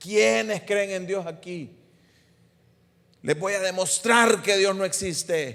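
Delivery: high voice calling out. Retelling shouting at people in the street: imitating own past shouting. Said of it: "le gritaba a la gente".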